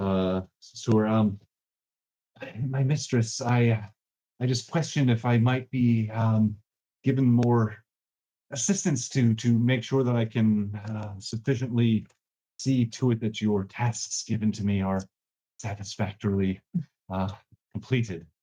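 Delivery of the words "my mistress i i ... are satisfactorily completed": whiny, pleading servant voice. A servant character addressing his mistress in a retold scene: whining voice. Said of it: "in this like kind of whining voice".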